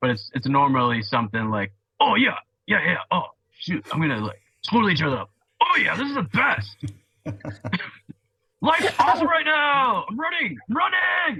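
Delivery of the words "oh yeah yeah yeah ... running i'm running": very high, swooping male dog character voice. Showing how he voices his dog Star: male dog character voice. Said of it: "a star voice".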